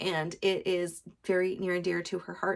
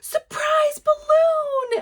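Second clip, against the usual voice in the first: put-on very high, shrill, thrilled little child's scream; 11 dB louder than usual. Retelling a girl spotting a balloon after preschool, retelling her excited scream. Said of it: "and she just screams".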